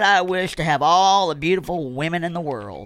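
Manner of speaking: plain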